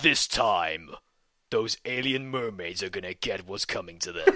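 deep video game trailer announcer narration voice. Joining in on a made-up game announcement, video game trailer voice. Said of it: "Apparently I do a very good trailer voice".

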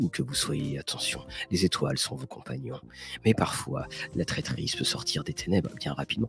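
low, hushed, creaky late-night radio announcer voice. Host performs the nighttime voice planned for a show segment, late-night radio voice. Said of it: "où on fera une belle voix nocturne".

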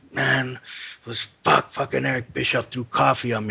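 angry, fed-up, really pissed-off griping. Retelling what a man said when he came out really pissed off, acting out the anger. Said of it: "he was real pissed off".

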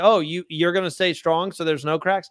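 plain

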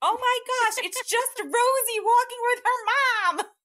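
high, shrill, full-volume, exasperated yell. The speaker recounts yelling at the dogs with the windows open, retelling yelling at the dogs. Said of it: "I'm like yelling at the dogs like".

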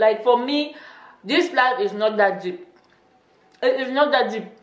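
talking with a full mouth while chewing. Talking about own personality, talking while chewing. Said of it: "I'm sorry, I'm chewing".

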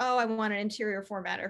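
ordinary talk

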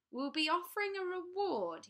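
slick, oily voice. A narrator reads the taller crow's added line aloud, in an oily voice. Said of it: "he added in an oily voice".

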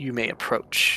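deep rumbling voice. Speaking as Protanther in common to those before him, Protanther's deep chest rumble. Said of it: "his voice will kind of rumble deeply in his chest".

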